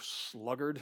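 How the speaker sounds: emphatic extra stress on "sluggard". Calling it a great word and saying it with emphasis on sluggard. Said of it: "You just want to say it with a little bit of a emphasis".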